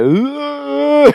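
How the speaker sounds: acted-out long, very high groan on ugh. Retelling barely being able to move at a door, imitating a groan. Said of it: "I like am just groaning like".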